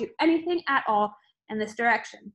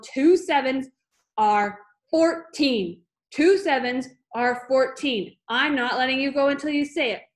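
loud, booming bellow; 5 dB louder than usual. Narrator reads a woman holding a screaming boy in the air, Miss Trunchbull bellowing. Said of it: "Miss Trunchbull bellowed".

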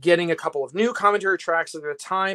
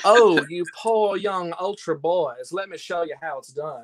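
fancy put-on Southern dandy gentleman voice. Showing how he voiced a fancy character, in a fancy Southern dandy voice. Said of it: "He dresses like a Southern dandy. And I said, I'll voice him like this".

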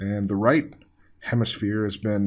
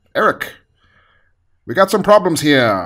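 put-on booming old-time 1940s radio announcer voice; 6 semitones higher, 9 dB louder than usual. Retelling how the boss called the speaker into the office, 1940s radio announcer voice. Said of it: "my boss speaks like a 1940s radio announcer".

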